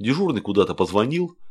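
ordinary delivery

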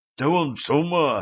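gasping in shock. A young man reacts as a wolf leaps through the window toward the bullets: gasping in shock. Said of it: "ахнул юноша".

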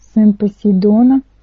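usual speaking voice

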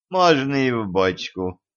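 gracious, magnanimous, indulgent tone. Denis answers the host's offer of a barrel, graciously permitting. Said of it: "милостиво разрешил Денис".

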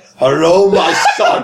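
giant, huge dragon voice. Imagining a giant green dragon greeting its son: giant space dragon voice. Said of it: "giant green dragon just look up to him and just be like".

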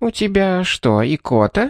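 high, slow, silky, ingratiating, insinuating tone. The grandmother, whose cane just jabbed Caroline, asks her: insinuating. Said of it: "вкрадчиво осведомилась бабушка".

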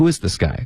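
is pressed hard, then falling.

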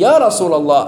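usual speaking voice

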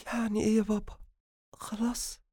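trembling, quivering voice. Narrator reading a daughter's reply to her father's bad news, in a trembling voice. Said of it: "وقالت بصوت مرتجف".

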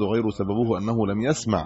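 ordinary talk

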